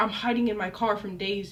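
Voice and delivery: ordinary talk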